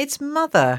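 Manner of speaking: high exclamation, called out. One of the children, seeing his mother enter the garden, crying out. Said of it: "cried Dickon".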